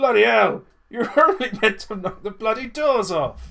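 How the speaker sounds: fed-up outburst. Narrating an RPG scene, voicing O'Neill throwing a rope: O'Neill's exasperated shout. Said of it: "chucks a rope over and goes".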